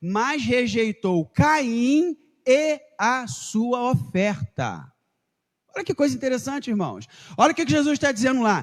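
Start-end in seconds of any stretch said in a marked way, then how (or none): 0.0-4.9 very slow, deliberate, paused reading, "Caim" stretched. Rereading a Bible translation aloud to the congregation, slow reading with pauses. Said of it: "Vou ler novamente agora pausadamente".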